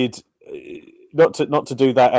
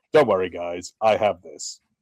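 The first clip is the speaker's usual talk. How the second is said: deadpan put-on voice, lower; 6 semitones lower, 4 dB quieter than usual. Pitching a deadpan emotion character for a Pixar film: deadpan John Cena voice. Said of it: "a deadpan emotion where he's like".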